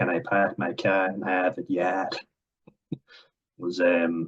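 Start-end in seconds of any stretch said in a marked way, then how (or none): 0.0-1.7 put-on Boston accent delivery. Praising how people in Boston talk, a line in a Boston accent. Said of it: "Love how they say it. The Boston accent is a good accent".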